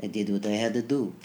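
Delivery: put-on flat, calm, deadpan, no-big-deal Russian accent. Recalling a calm man who influenced you, quoting him in his russian accent. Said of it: "like in his yeah. Russian accent".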